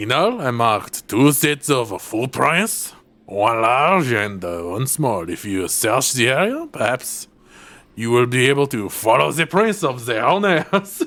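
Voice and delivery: exaggerated comic French accent. Narrating a voiceover; Lumiere-like French accent. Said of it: "I sound like Lumiere?".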